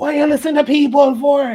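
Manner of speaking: mock very high, loud, scolding shout. Recounting dad's early-morning phone call: imitating dad's loud yell. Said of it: "like loud yell on the phone".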